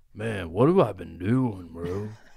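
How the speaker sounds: put-on deep, stoned-dude stoner voice. Acting out a stoned guy coming to his senses, put-on deep voice. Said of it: "He gets a deep voice".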